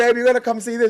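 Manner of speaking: shrill, very loud, high-pitched yell. Retelling running outside to call their girlfriend over: retelling a yell. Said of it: "yelling at my girlfriend".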